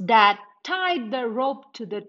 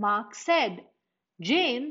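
ordinary delivery, nothing marked

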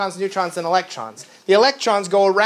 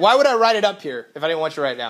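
snappy, curt, sarcastic tone; 3 semitones lower than usual. Answering a student who asks whether to write it down: snappy, sarcastic tone.

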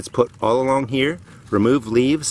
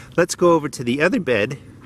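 voice breaking and cracking mid-line; 4 semitones higher than usual. Speaker inspecting garden beds moves on to the next one, voice cracking. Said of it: "Don't know why my voice just cracked".

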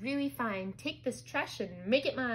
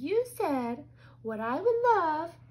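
put-on high-pitched voice, louder, slower; 5 semitones higher, 6 dB louder than usual. Peter giggles, repeating what the narrator said; high-pitched imitation of narrator. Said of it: "imitating me in a high-pitched voice".

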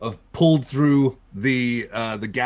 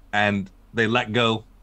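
ordinary talk

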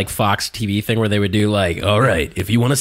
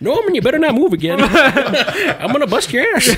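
put-on high-pitched old geezer voice; 4 dB louder than usual. Acting out an old man in a rocking chair scolding norman: put-on old man voice. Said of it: "old man in a rocking chair".

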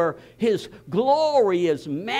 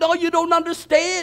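put-on upset man voice, higher pitch; 7 semitones higher, 4 dB louder than usual. Retelling what Bill Aragoni said on the phone: imitating an upset man. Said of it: "He's all upset".

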